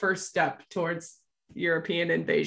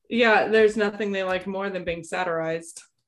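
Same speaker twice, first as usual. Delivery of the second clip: usual speaking voice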